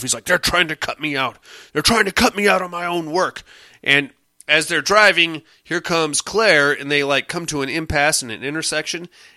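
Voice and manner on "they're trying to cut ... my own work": irate, fed-up, angry rant. Recapping a scene where a man fumes while driving, retelling an angry rant. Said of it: "he's like getting all pissed off".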